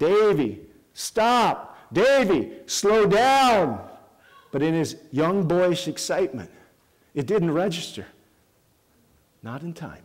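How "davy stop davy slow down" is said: very slow, high, stretched-out yelling. Retelling a bike ride going too fast: retelling yelling at a child. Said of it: "I start yelling".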